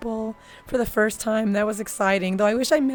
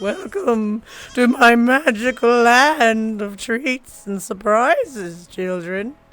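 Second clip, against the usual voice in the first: very slow, drawn-out, silly creepy voice; 6 dB louder than usual. Voice was messed up, so doing voice bits: silly, creepy voice. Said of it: "really silly, creepy voice".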